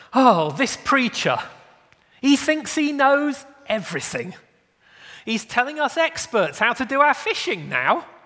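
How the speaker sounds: sarcastic, irritated tone. Acting out Peter's reply to Jesus: imitating Peter, sarcastic and irritated. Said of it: "imagine the tone of voice in Peter's reply".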